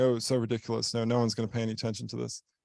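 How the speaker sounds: plain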